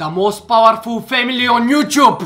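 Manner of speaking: Bulgarian-accented speech. A YouTuber asking viewers to subscribe: Bulgarian accent. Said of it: "I tried to say this with a Bulgarian accent".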